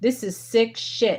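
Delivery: worked-up, furious, angry outburst. Reacting to what others show the world, angry. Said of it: "I'm so angry right now".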